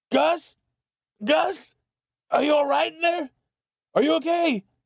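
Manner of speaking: very high, pained, fearful crying out. Reading a story, a character calls to another in the woods, calling out in pain and fear. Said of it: "[name] looked over the side trying to see what the masked man was doing. / The momentum from their ride sent [name] flying into a tree trunk and snapped his spine. [name] sat in the woods watching the".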